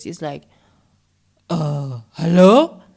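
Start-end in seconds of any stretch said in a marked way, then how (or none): 1.5-2.7 loud mock Afrikaans accent. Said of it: "he mimics this other Afrikaans voice".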